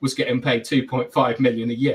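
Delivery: ordinary talk, nothing marked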